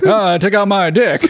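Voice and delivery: put-on old radio announcer's mid-Atlantic accent, old-timey. Riffing as old-timey radio guys, switching into a mid-Atlantic accent. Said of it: "start talking with a mid-Atlantic accent".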